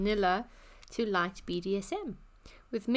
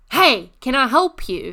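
very loud, slow, aggressive bellowing shout; 4 semitones higher, 17 dB louder than usual. Retelling how a friend offered help to an old man: imitating a shout. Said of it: "literally shouts at this old man".

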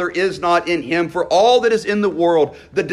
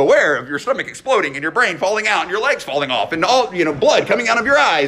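very fast, breakneck run-on patter. Mocking the warnings at the end of a headache remedy; Micro Machines fast-talker voice. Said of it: "There's this Micro Machines voice at the end that's like".

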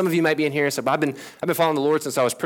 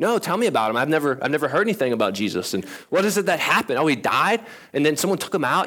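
ordinary delivery

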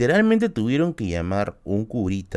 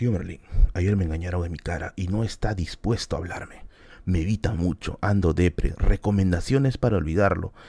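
deep, broadcaster-style radio announcer reading voice; 4 semitones lower than usual. Live stream host reads out Flor's message in an announcer voice. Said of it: "con voz de locutor".

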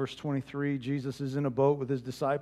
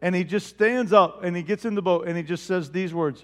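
ordinary talk

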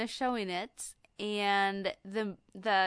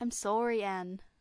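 put-on, imitated Canadian accent. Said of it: "it's supposed to be Canadian".

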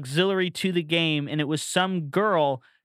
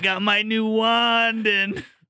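terrible put-on Italian accent in a deep voice; 5 semitones higher than usual. Showing a TikTok trend of terrible impersonations: deep Italian guy voice. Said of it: "it's just a deep voice, like, Italian guy".

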